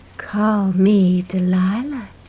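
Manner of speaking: smooth, purring, cat-like delivery. In a story, a stegosaurus introduces herself to Dusty in a soft, purring voice. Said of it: "in a soft, purring voice".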